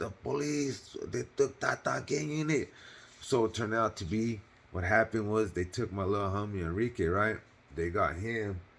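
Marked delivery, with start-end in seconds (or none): 0.0-2.7 put-on paisa accent, pitched up, broken English. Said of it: "she talks with the accent".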